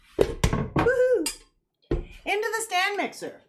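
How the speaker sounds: whooping shout, pitched way up, slow and drawn-out. Announcing the next baking step at the stand mixer: yelling. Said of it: "I just yelled it like that".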